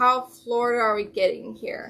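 ordinary delivery

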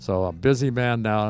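usual speaking voice

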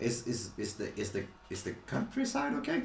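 whispered, stuttering character voice, words repeated over. Voicing a dazed character asking about the countryside: stuttering character voice. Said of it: "He speaks like that".

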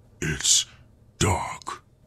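said with a growl. A man holding the narrator in his grip repeats a warning, growling. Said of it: "the man growled".

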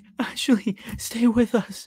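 very high, deliberately cracking, breaking voice. Reacting to a video of kids acting, imitating Blake, voice breaking. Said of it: "I'm intentionally breaking my voice".

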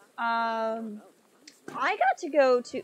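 loud voice breaking and cracking mid-phrase. Answering a comment about zoo reptile exhibits, voice cracking. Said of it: "my voice cracked like nothing else there".

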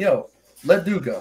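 plain

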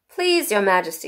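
ordinary delivery

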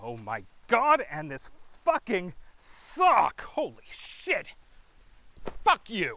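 loud, rising, angry, swearing temper-tantrum outburst. Cursing over a sock while someone mocks you, throwing a temper tantrum. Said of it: "Are you done having your temper tantrum?".

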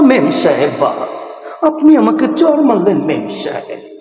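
put-on, hurt, movie-style dialogue delivery. Acting out a film dialogue where the hero is hurt: Omar Sani, mock-hurt. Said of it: "ওমরসানি কষ্ট পেয়ে এইভাবে বলছে".

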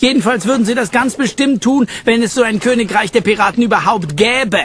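high, scoffing snort. Reading a story, a character answers a mocking remark: snorting. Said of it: "schnaubte er".

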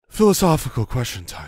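lofty, grand, wise sage-like philosopher voice. Posing a philosophical question to the other speaker, in a Socrates voice. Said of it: "What was that voice?".

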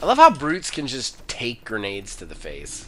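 very low, soft, swooping dry sarcastic aside. Playing a game with a teammate, commenting on the enemies: sarcastic. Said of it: "I was being sarcastic".

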